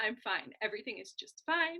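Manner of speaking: insistent tone, yet voice sounds not fine. Showing how a voice can send a different message: voice contradicting the words. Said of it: "you can tell that I'm not fine because my larynx is doing something that is arguing with the message".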